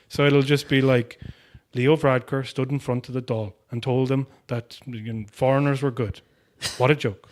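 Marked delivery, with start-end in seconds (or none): 1.7-7.1 completely level, flat, quiet monotone with no emphasis. Describing a man who delivers everything without emphasis, the speaker imitates Dan's monotone voice. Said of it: "has this completely monotone voice".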